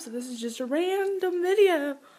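words stretched through a yawn. Wrapping up a random video while tired, speaking mid-yawn: yawning while talking. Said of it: "I just had to yawn".

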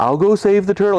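lightly mocking, playful, sarcastic, teasing tone. Speaker retells their own reply to a woman, retelling a teasing remark. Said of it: "I sort of teased her a little".

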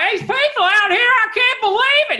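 put-on heavy Southern accent, very high, loud, severe. Retelling what a San Francisco cab driver said, imitating a severe Southern accent. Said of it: "the most severe Southern accent I ever heard".

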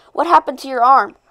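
ordinary talk

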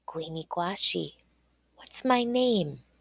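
soft-spoken, quiet, gentle. [name] addresses Quashiba, speaking softly.

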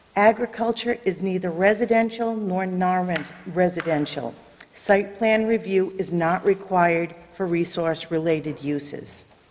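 normal talking voice

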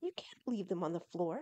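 ordinary delivery

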